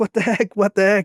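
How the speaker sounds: panicked, disbelieving, frantic freaked-out exclamations. Retelling looking down and finding nothing there: retelling freaking out. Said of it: "I'm freaking out".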